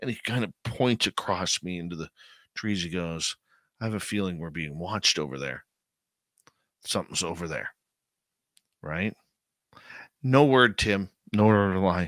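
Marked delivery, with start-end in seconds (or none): 3.8-7.7 soft, hushed, secretive half-whisper. Retelling a buddy's warning of being watched: imitating Mikey half-whispering. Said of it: "my buddy Mikey whispers to me".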